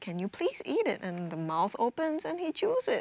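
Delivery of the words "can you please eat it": calm, gentle, really calm tone. Speaker retells how they spoke to a child who wouldn't eat; retelling a calm request. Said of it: "really calmly saying to him".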